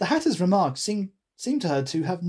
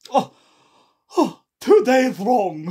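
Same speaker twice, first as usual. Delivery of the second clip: heavy sigh, raised, lamenting voice; 4 semitones higher, 7 dB louder than usual. Narrator reading the Hatter's reply about the watch to Alice, sighing. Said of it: "sighed the Hatter".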